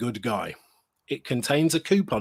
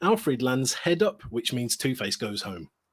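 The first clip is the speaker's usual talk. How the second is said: ordinary delivery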